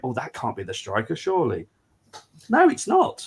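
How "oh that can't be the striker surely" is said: put-on panicked voice, quieter. Retelling how fans reacted to a transfer rumour: imitating panicked fans. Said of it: "they're going".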